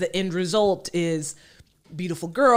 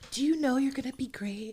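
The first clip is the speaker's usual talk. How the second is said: put-on nurturing baby voice, higher and quieter; 5 semitones higher, 9 dB quieter than usual. Imitating Tyra Banks comforting an upset girl on the show: Tyra Banks baby voice. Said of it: "she would put on that baby voice".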